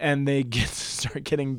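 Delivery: talking while laughing, chuckling through the words. Retelling a Bible story to another speaker, laughing while talking. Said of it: "I don't know why I'm laughing".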